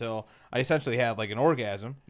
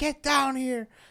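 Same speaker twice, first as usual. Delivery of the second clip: very high, shrill hollered scream; 13 semitones higher than usual. Retelling how mom screamed for the kids upstairs: imitating mom screaming. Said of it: "and my mom screams".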